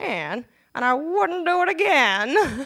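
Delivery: put-on very slow, high, snarky, sardonic old-lady drawl. Speaker retells what an elderly woman said after mentioning three marriages: imitating Cecile's snarky voice. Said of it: "in this awesome, snarky old lady voice".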